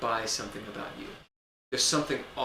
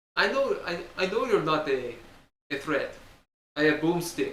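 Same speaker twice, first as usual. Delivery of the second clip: put-on Eastern European accent, Romanian-sounding; 3 semitones higher, 4 dB louder than usual. Player voicing an old man character on request, eastern european accent. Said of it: "It was an Eastern European sort of".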